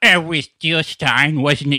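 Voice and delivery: slow, clueless, drawled put-on voice.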